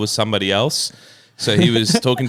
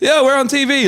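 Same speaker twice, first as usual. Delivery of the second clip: mock shrill, loud, very high blurted call-out; 4 dB louder than usual. Retelling how the speaker called out while a celebrity was there, retelling a loud call-out. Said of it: "like I said that really loud".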